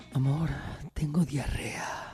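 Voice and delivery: sultry, sexy, breathy, seductive whisper. Joking about phrases that sound wrong said in a sexy voice: sexy voice. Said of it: "Frases que no suenan bien si las dices con voz sexy".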